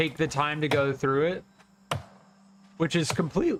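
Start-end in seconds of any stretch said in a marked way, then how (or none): 2.8-3.6 voice cracks on the word "complete". Talking about a game's main quest line, the speaker's voice cracks. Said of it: "that voice crack".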